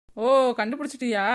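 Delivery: ordinary delivery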